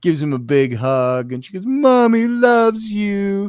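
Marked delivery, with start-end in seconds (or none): 1.6-3.5 loud, high-pitched, playful, doting, teasing mother voice. Retelling how Rainey hugs her son each morning: imitating teasing mother. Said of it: "she always teases him with it".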